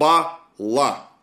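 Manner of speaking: stress on first syllable БА in Бала. Introducing a Sumerian word, noting the stress matters: stress on first syllable of Бала. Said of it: "ударение на первый слог".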